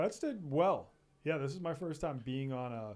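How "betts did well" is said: genuinely surprised, shocked tone, pitched up. Grading someone's performance at the end of the episode: sounding shocked. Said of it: "you sounded very shocked when you said that".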